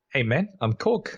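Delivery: put-on easy, relaxed New Zealand accent. Asked how New Zealanders talk, a speaker does a Korg impression, New Zealand accent. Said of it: "That that's a New Zealand accent".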